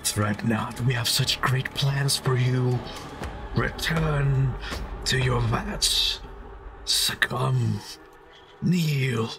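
slow, thick, slimy, malicious, menacing voice. A game master voices a different voice reverberating through the players' minds: thick, malicious, slimy. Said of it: "thick and malicious and slimy".

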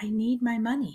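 put-on a girl's small, high little voice. A girl held in her mother's grasp, answering her in a small voice. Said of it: "In a small voice".

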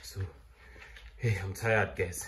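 tired, winded voice with heavy breathing. Cleaning out the chicken house and talking to viewers: tired, breathing heavily. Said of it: "You can even hear that I'm breathing heavily".

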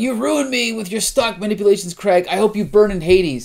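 mock yelling. Describing a comic scene, imitating a restrained man yelling at a businessman, retelling a yell. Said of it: "he's yelling at this guy, saying".

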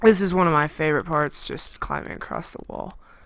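obvious sarcasm, mock enthusiasm. Live recording while playing a game, sarcastic. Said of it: "If you can't hear the sarcasm in my voice".

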